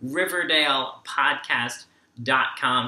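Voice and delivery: slow, deliberate delivery. Host closing the video, repeating the podcast's web address, saying it again slower. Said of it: "Let me say that again a little slower".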